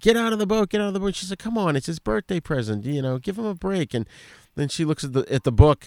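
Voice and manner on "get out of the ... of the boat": mock rapid, repeated, high, fast hollering. Telling a story, the speaker re-enacts someone yelling out the window. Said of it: "Brody's yelling out the window".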